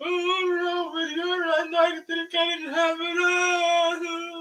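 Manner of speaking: mock tearful sobbing speech, very high and drawn-out. Retelling how Otowane cried after his first win: Otowane crying impression. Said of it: "he started crying, like".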